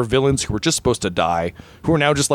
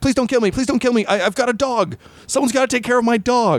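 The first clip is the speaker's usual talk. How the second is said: shrill, frantic, panicked goblin voice, pleading; 11 semitones higher than usual. A game master retells a speared goblin begging a player for its life, imitating its panic. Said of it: "the goblin is like panicking".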